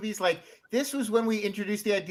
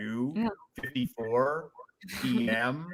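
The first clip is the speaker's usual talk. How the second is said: put-on online video narrator cadence, lower and quieter; 7 semitones lower, 4 dB quieter than usual. Describing a video's background clues: Nightmind cadence. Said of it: "That's the cadence. Nailed it".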